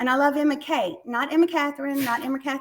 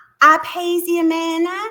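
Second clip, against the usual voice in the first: put-on sweet little girl baby voice, higher, louder; 3 semitones higher, 8 dB louder than usual. Retelling how a little girl answered who someone was, in a sweet little baby voice. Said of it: "just that sweet little baby voice".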